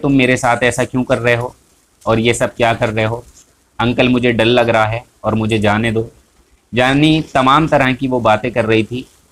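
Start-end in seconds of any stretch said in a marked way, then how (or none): none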